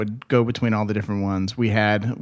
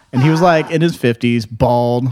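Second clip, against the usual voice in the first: ordinary talk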